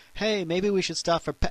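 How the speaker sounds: smug, condescending put-on tone. Driving the electric car past petrol stations, mock-smug, condescending. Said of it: "so now we smugly, condescendingly drive past".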